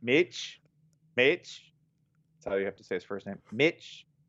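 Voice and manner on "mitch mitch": attempted put-on Australian accent. Asked to say his name in an Australian accent, the speaker tries an Australian accent. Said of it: "Say his name in an Australian accent".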